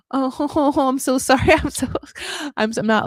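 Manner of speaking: words breaking into laughs. Answering another speaker who just described being anxious, laughing while talking. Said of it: "I'm laughing because I get you so much".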